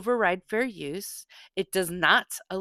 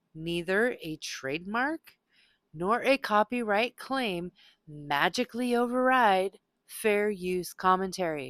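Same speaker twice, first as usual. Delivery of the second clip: slow, deliberate, each word laid out one by one. A creator addresses people hesitant to post lawful content, speaking slowly. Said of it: "let me say this slowly".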